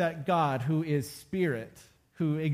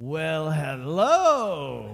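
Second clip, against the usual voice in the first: loud, rough, hoarse, raspy voice, hello drawn out; 5 dB louder than usual. Retelling what a woman holding whiskey and a cigarette said to them, in a raspy voice. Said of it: "she says in this raspy voice".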